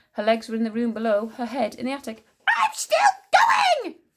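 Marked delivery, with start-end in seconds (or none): 2.5-3.8 put-on very high, loud, screechy old-woman scream. Narrating Grandma calling down from the attic, screaming in an old screechy voice. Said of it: "screamed the old screechy voice".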